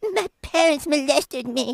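fake sobbing through the words. Showing another person how they should cry when saying this, fake crying. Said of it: "but you gotta cry like this".

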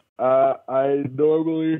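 yawning while talking. Asked what alarm sound they use, starting to answer while yawning. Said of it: "You're yawning".

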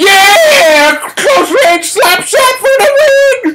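very high-pitched scream, extremely loud. Reacting to a game-winning slap shot from close range, screaming extremely loudly. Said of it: "I was screaming extremely loudly".

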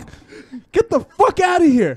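put-on freaked-out yell. Retelling yelling at a guy who knocked on the window: imitating a panicked yell. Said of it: "I started freaking out".

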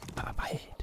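quiet secretive whispering.

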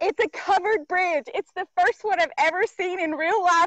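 thrilled, gushing excitement, nearly in tears. Showing viewers the first covered bridge ever seen in real life, excited, freaking out. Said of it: "I'm freaking out. Like, I could cry, y'all. I'm so excited".

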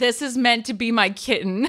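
ordinary delivery

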